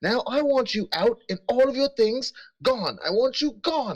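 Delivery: very high, furious, angry shouting. In a described scene, a woman on a rampage yells at him: angry yelling. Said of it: "you hear yelling".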